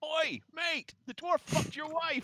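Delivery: shrill heckling yell, very high and very loud. Player's character heckles a fighter in front of the crowd, shouting from the bleachers. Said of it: "I shout from the bleachers".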